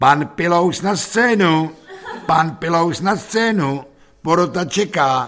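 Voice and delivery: calling out loud and high.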